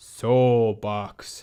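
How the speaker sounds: very deep, undead, zombie-like voice. Retelling an ad, the speaker quotes zombified Gregg Popovich answering Kevin Durant, deep zombie-like voice. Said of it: "in a very deep zombie-like tone".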